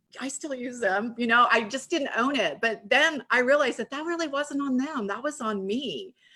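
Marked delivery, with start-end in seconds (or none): 0.2-1.2 low mumbled mutter under the breath, half to oneself. Retelling your reply when people asked if you still sold oils, muttering under your breath. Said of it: "I would be like under my breath".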